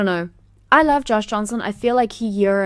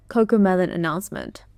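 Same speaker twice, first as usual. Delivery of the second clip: ordinary delivery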